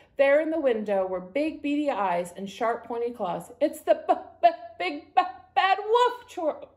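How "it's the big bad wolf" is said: slow, very drawn-out, high, nervous chattering. Narrating a character who just spotted the wolf at the window: chattering. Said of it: "Boris chattered".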